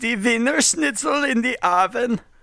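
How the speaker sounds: put-on, mock German accent. Asking others for accents, saying the sample phrase herself in a German accent. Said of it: "can I see hear your German accent?".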